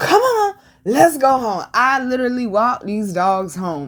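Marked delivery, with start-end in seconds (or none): 0.0-1.6 high, swooping, hollering yell. Retelling walking the dogs home, calling to them: retelling yelling at dogs. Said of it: "So I'm yelling at them".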